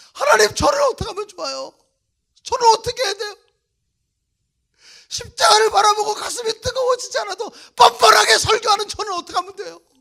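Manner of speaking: loud, high, wailing, sobbing voice.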